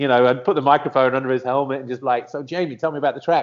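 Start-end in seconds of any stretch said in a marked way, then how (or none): 2.3-3.4 exaggerated fake American accent, higher pitch. Recalling interviewing a driver on the grid with a microphone, spoof American voice. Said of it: "I'd put on a spoof American voice".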